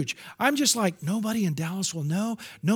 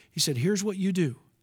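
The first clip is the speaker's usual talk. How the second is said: normal talking voice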